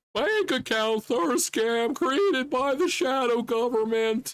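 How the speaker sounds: very high, perched-up put-on voice. Showing how Blake does the voices on the show, high put-on voice. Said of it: "he's more up here".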